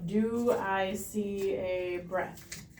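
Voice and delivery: very slow, quiet delivery. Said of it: "real slow".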